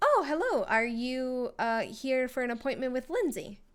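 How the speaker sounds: bright, chipper, happy tone with swooping pitch. Voicing Brian greeting arrivals at the elevator: Brian's chipper happy voice. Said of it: "He's very, like, chipper, like, happy guy".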